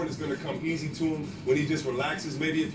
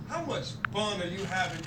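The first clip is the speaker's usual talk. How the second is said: ordinary talk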